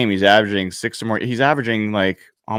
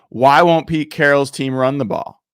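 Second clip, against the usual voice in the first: mock half-shouted, mildly yelled complaining tone; 4 semitones higher than usual. Complaining to Evan about the team's play calling: imitating own screaming. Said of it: "screaming at you saying".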